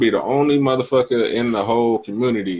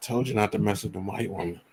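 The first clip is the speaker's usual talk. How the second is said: barely audible, very soft half-whispered murmur; 2 semitones lower, 10 dB quieter than usual. Voicing a warning heard in the back of one's head: imitating a woman half-whispering.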